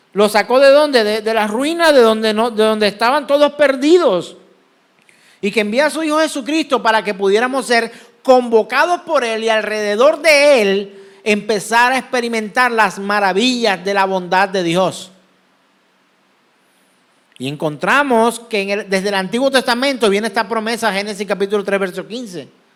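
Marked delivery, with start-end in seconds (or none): 20.9-22.4 rushed, rattled off much too quickly. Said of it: "creo que lo dije muy rápido".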